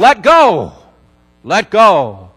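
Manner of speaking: very slow, booming voice from above. Telling a story, the speaker voices the heavens answering a desperate man: booming heavenly voice. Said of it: "this booming voice comes out of the heavens and says".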